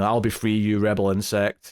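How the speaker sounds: usual speaking voice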